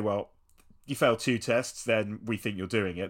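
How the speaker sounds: usual speaking voice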